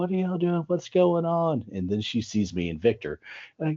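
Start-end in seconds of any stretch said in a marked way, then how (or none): 0.0-1.7 play-acted hollering, pitched very high. Retelling a manager running out at the hotel, imitating Indra hollering. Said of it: "hollering like".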